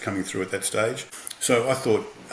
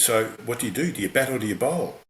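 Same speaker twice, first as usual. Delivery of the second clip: keen, thrilled, excited, eager tone; 3 semitones higher than usual. Retelling how the man on the plane questioned him: imitating an excited question. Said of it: "he looked at me very excited".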